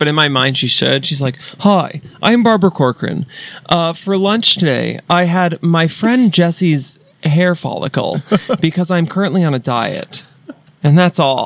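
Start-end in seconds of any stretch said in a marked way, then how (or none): 1.6-11.5 slow, robotic, part computer-like voice. Asked by the other speaker to do the voice from before: Barbara Corcoran voice. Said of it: "the voice that you were doing before we started".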